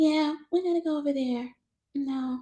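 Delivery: very light soft voice. A speaker shows how their mother sounded, imitating mom's soft, light voice. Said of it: "That was my mom's voice".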